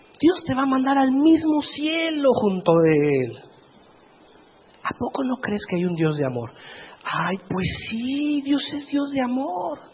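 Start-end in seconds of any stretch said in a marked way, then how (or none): 0.2-6.5 put-on coaxing, tempting devil voice, ironic. Acting out the devil's persuasion to a believer: put-on ironic voice of the devil. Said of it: "lo estoy diciendo irónicamente".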